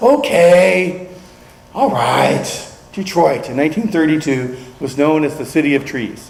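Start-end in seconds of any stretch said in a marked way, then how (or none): 0.0-2.7 put-on teenage boy voice. Acting out a character answering his mother's voice in his head, like a teenage boy. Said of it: "he's saying like a teenage boy".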